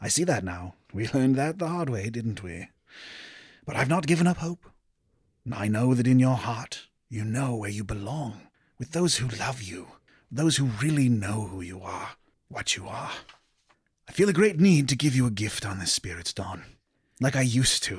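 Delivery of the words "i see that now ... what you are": very soft, crackling magical voice. A voice speaks to the listener from inside a gem: soft magical voice. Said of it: "very softly emanating from the gem itself".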